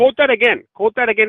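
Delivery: very loud, very high-pitched, shrill yelling. Arguing with another speaker, demanding a quote be repeated, yelling. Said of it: "I don't know why you're yelling".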